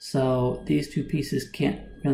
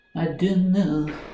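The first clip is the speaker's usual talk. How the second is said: put-on French speaker's accent in English; 3 semitones higher than usual. A chess player mulling over where to move a piece, French accent impression. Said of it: "That's my French impression".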